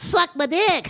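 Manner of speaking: very high-pitched, full cartoon voice. Pitching a joke promo, imitating SpongeBob: SpongeBob SquarePants voice. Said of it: "SpongeBob SquarePants where he goes".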